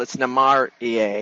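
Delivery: slow Namarie with stress on the accented A.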